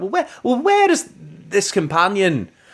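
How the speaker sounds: high-pitched attempt at a Scottish accent. Discussing episodes with a co-host, quoting Jamie in an attempted Scottish accent. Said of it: "your attempt at a Scottish accent".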